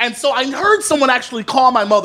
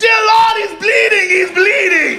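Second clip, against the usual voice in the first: mock whole-room yell, high and drawn out; 9 semitones higher, 4 dB louder than usual. Telling how the whole room yelled when he began bleeding; retelling a room yelling. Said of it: "the entire room just starts yelling".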